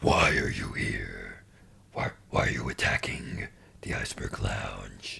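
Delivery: hushed, low-key, dark vigilante voice. Playing a game as Batman, the speaker interrogates an enemy: Batman voice, Venom-like. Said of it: "I sound a bit more like Venom".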